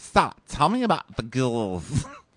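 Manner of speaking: put-on drawn-out, sing-song Valley Girl Midwestern accent. Talking about a woman on the show, imitating her valley girl midwestern accent. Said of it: "She's got a Valley Girl Midwestern accent".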